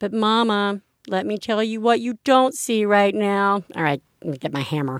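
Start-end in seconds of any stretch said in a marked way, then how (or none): none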